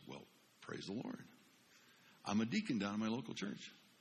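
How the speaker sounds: put-on quiet, hushed voice. The speaker retells how a man answered on hearing he was a pastor: imitating someone going quiet. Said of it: "he got real quiet and he goes".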